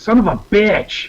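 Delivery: very high, slow, drawn-out shriek. Voicing a character who watches a raider leave: character Chugs screaming. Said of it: "So Chugs is gonna scream".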